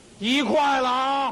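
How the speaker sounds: slow, drawn-out, loud shouting.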